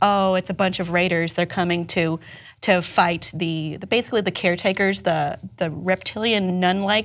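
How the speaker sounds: ordinary talk, nothing marked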